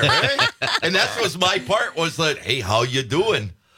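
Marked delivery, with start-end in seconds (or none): 2.4-3.5 low put-on Wisconsin Midwestern accent. Recalling their part in an unmade commercial, the speaker does a Wisconsin accent. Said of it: "a Wisconsin version of the Wisconsin accent".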